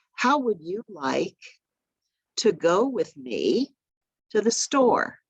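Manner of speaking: halting, chunked phrasing with pauses and swooping pitch. Showing how to speak to someone with hearing loss: speaking in short sections with pauses. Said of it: "break up what you're saying into sections".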